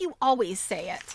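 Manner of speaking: usual speaking voice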